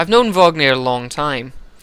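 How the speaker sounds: ordinary delivery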